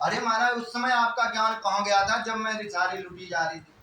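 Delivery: plain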